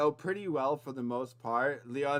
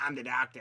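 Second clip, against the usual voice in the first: put-on voice of a little gnome character; 3 semitones lower, 4 dB quieter than usual. Voicing a small gnome who says he is the doctor: gnome doctor voice. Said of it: "a small gnome wanders up to you, and he's like".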